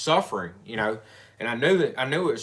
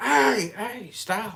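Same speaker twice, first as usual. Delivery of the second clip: put-on very high, urgent yell; 11 semitones higher than usual. Retelling yelling at a lady driving too fast: retelling own yell. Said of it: "So I'm yelling at this lady".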